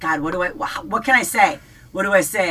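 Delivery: ordinary delivery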